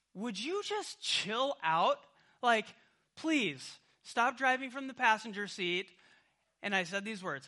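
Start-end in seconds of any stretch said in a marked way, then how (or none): 0.2-5.9 high, super defensive tone. Retelling what he said to his wife while driving: retelling being super defensive. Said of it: "I got super defensive and I was like".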